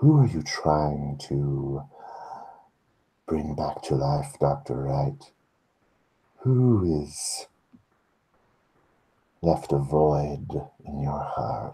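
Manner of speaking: whispered delivery. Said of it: "she continues whispering to you".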